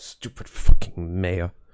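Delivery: very loud grumbling aside, in character. Playing a character who mutters about the mayor: mumbling to oneself in character. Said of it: "I just mumbled to myself".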